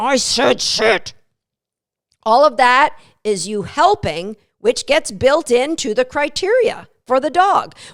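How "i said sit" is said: spoken through gritted teeth, much slower. Showing how you might repeat a sit command to a dog, through gritted teeth. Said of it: "grit your teeth".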